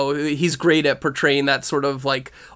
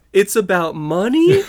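put-on high, naive, wide-eyed little boy voice; 5 semitones higher, 3 dB louder than usual. Mocking people surprised by something obvious, imitating a naive little boy. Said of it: "he says it like a little boy".

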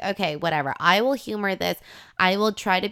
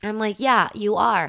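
ordinary delivery

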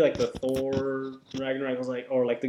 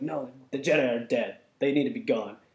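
put-on cranky, dismissive grumpy old man voice. Retelling Mark Hamill's trailer reply to Rey: mock-grumpy Mark Hamill impression. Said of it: "he sounds like a grumpy old man".

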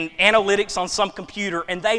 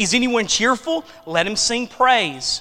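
plain

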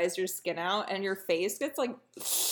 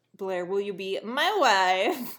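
put-on over-the-top Eastern European accent, "wife" stretched out; 3 semitones lower, 4 dB louder than usual. Recounting the episode, play Chuck proposing to Blair in a Borat voice. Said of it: "he did do a Borat voice".

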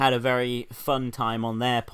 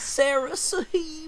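very high, squeaky put-on voice. Asked by another speaker to say her name, saying it in the Gapes voice. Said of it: "say my name in the Gapes voice".

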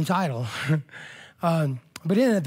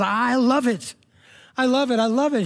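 play-acted high, slow, thrilled little-girl excitement; 8 semitones higher, 4 dB louder than usual. Retelling a lady's words in an elevator: imitating a little girl's excitement. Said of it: "She was with the excitement of a little girl".

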